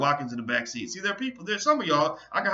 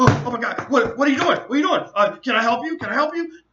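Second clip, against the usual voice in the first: mock frantic, stumbling, loud, high, panicked; 9 semitones higher, 7 dB louder than usual. Recounting opening the wrong car on a man, imitating him freaking out. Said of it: "he literally freaked out".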